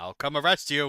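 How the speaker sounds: very high, loud, shrill, booming robot voice. Voicing a character the players start pelting with blueberries, in a very robotic voice. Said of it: "Voice very roboty".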